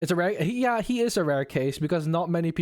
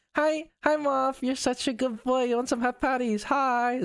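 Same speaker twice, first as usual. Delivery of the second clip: sudden switch to pitched-up pet talk voice; 7 semitones higher than usual. Speaker breaks off a rant to greet the pet: sudden switch in tone. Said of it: "I'm sorry for the tone swap".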